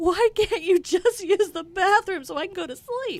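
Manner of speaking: play-acted, high, tearful, weepy crying whine. Retelling pleading with a dog that wouldn't go outside: retelling own crying plea. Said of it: "I'm crying because the dog would not".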